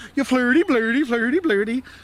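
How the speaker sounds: put-on mock Swedish gibberish voice. Imitating how people tease Swedes: Swedish Chef impression.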